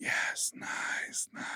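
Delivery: put-on whispery voice. Retelling how a sleepy partner talked: imitating someone whispering. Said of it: "everything was whispery".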